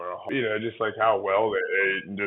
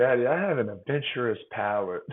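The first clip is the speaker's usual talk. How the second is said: put-on child voice; 2 semitones higher than usual. A father retelling what his daughter always says to him, imitating Scotty's voice. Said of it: "That's exactly her voice too".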